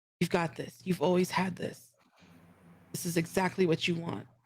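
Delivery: hushed, whispered voice. Casting an encouragement spell, grabbing an ally's hand and whispering to him. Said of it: "just whisper".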